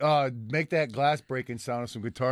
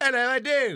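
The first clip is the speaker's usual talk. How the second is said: very high, unconvincing, fake Irish accent; 12 semitones higher, 4 dB louder than usual. Trying out how Irish guys say it: attempted Irish accent. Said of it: "Try it".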